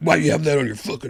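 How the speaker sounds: hostile, aggressive, macho tough-guy voice. Retelling how macho guys react to a shirt: imitating macho guys. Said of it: "macho guys are like".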